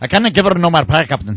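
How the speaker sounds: heavy, thickly laid-on Scottish brogue. Mimicking a man whose opinion nobody understands: Scotty impression, heavier brogue. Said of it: "but with a heavier brogue".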